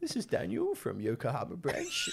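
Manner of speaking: high, swooping, sing-song put-on character voice. Speaker shows off his impression of Dan, doing a Dan impression. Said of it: "I can do a really good impression of Dan".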